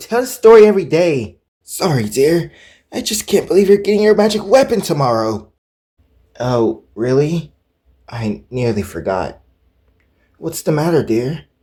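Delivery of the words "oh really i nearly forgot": sounding upset. Answering a parent's remark about tomorrow's magic weapon: sounding upset. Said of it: "You sound upset".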